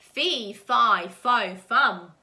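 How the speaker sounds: horrible booming giant bellow, very slow and drawn out. A wolf climbing a beanstalk hears a giant call out, horrible booming giant voice. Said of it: "horrible giant voice bowling".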